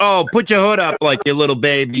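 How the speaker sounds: condescending, belittling, mocking, talking-down tone. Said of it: "she said it in a talking down to him".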